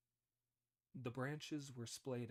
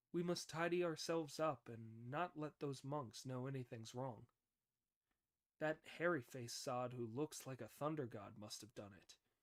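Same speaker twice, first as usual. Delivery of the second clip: ordinary delivery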